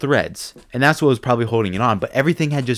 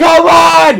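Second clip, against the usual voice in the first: yelling, pitched higher and louder; 11 dB louder than usual. Retelling how another person yelled while pulling out a bolt: imitating someone yelling. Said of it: "I just hear him yell".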